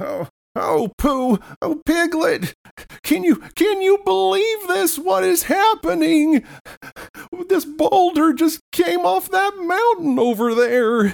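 flustered, very high, frantic fretting, drawn out. Voicing Rabbit, who finds his ruined garden: frantic Rabbit voice. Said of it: "is just frantic".

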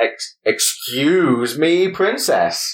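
snarky, high-pitched, very slow drawn-out delivery. Quoting a cartoon character's catchphrase: snarky Link voice. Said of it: "He's like a really snarky Link".

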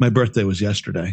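mock dry, expressionless, low, flat deadpan. Telling a story, quoting his wife's remark to him, imitating wife's deadpan. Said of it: "in her deadpan way".

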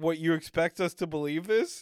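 ordinary delivery

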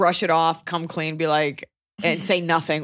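plain

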